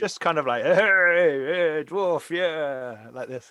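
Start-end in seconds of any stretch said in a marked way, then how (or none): 0.6-3.1 put-on happy, tipsy, loud, very slow, drawn-out drunk voice. Voicing a tavern patron who greets a dwarf: drunk patron greeting a dwarf. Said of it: "he's clearly had a few drinks".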